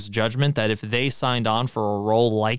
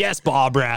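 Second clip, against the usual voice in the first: put-on Australian accent. Retelling a scene where a guy answers an older Brooklyn lady, Australian accent. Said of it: "So it's like an Australian guy".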